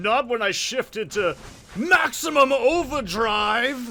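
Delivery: very loud, high, slow, swooping villain yell. Playing a game and bursting into a yelling Plankton voice. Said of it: "my yelling Plankton voice".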